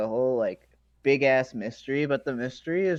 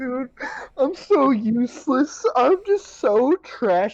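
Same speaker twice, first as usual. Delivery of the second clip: play-acted very high, very slow tearful blubber; 11 semitones higher, 4 dB louder than usual. Mocking a character who cries every episode: imitating Aaron crying. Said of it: "And Aaron cries, like, every single episode".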